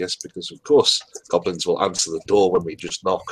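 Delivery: dry, sarcastic grumbling mutter under the breath. A player speaks in character to the group, muttering under the breath. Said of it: "mutter under our breath".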